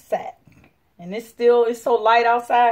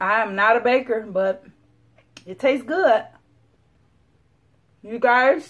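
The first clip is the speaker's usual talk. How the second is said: speech muffled by a full mouth. Tasting the banana bread just baked, talking with mouth full. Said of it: "talk with my mouth full, sorry".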